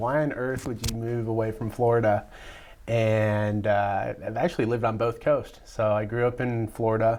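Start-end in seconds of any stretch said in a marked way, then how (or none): none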